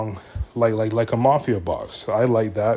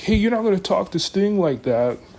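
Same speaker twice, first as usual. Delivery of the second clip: put-on high, raised half-yell; 9 semitones higher than usual. Retelling a wrestling segment, imitating Darby Allin yelling. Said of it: "Darby comes in kinda yelling".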